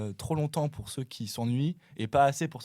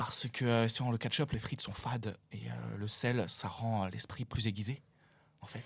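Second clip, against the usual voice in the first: French movie-star voice; 5 dB quieter than usual. Doing a requested impression for the others: Vincent Cassel impression. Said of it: "je sais pas combien de pourcentage je fais Cassel".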